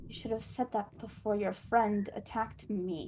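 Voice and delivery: echo-like voice. Voicing a creature that turns to speak to a player in a game, echoing voice. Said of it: "in a echoing voice".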